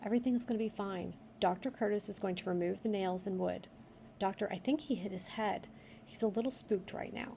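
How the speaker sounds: plain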